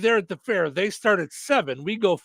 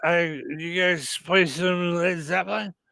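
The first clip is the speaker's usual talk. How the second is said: put-on drunk voice, slower pace; 3 semitones lower than usual. Retelling a hammered man's morning phone calls, imitating a drunk man. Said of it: "you know me with my drunk voice".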